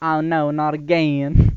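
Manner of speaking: drawn-out Southern speech. Voicing the game character Ayla complaining: Ayla with Southern accent. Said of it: "I was trying to speak Southern".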